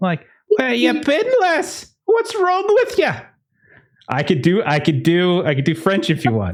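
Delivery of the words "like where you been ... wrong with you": not-great, very high Irish accent attempt. Acting out someone asking where another person has been, in an attempted Irish accent. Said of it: "I'm not great with Irish accents, but I'm going to give it a go".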